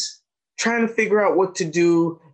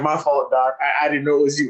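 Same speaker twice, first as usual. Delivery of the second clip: normal talking voice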